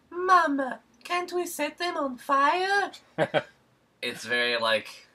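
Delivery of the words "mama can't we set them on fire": bad Italian accent, very high, slow, drawn out. Describing an anime's dub, quoting the character Italy in Italy's Italian accent. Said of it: "Italian accent".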